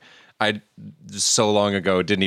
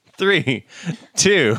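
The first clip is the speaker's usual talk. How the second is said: laughing through words, higher pitch; 7 semitones higher than usual. Counting down to start the film after saying three twice: laughing while counting. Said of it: "I'm laughing 'cause I said three twice".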